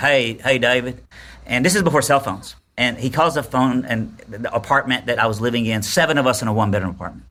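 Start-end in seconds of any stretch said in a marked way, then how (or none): 0.0-1.0 put-on down-home country boy voice. Retelling a phone call from a stranger: country boy voice. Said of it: "kind of a country boy".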